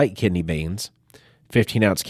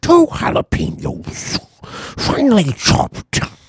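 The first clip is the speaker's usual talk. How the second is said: put-on creepy clown voice, higher and louder; 13 semitones higher, 4 dB louder than usual. Showing how a recipe line slips into another voice: Pennywise voice. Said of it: "Pennywise voice".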